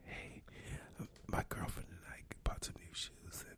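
hushed whisper. Imitating a video seen on a show about YouTube: imitating whispering. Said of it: "It was whispering".

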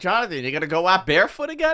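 play-acted berating, high-pitched, rising yell. Retelling how he yells at Jonathan: imitating himself yelling. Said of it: "I'm yelling at Jonathan. I'm like".

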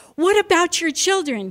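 very excited, very high-pitched and loud. Narrator reads the Spirit of God questioning a man of God, very excited voice. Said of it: "in a very excited voice".

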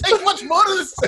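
high, shouted, panicked voice.

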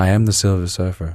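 flat monotone with no emotion at all. Playing the Silver Surfer during a chat with Ashley, speak in an emotionless Silver Surfer voice. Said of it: "I talk like this because I'm emotionless".

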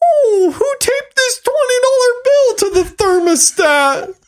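very high, defensive father voice. Mimicking how their dad constantly talks: imitating dad's high defensive voice. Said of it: "that's what dad's voice sounds like all the time".

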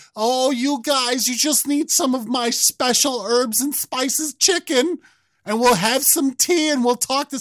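very high, mocking old woman voice. Mocking a wrestling promo as Nana: mocking Daniel Cormier as Nana. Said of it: "fucking Nana Cormier is always".

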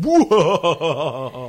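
loud, belted, maniacal haunted-house laugh. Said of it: "laughing maniacally".

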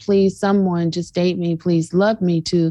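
mock desperate, begging-sounding tone. Speaker acting out how people sound about dating, mock-desperate pleading. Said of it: "that desperation of like".

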